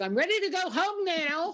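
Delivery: put-on small child voice, very high and very slow. Retelling a theater moment when a kid down front spoke up: little kid's voice. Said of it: "a little kid's voice says".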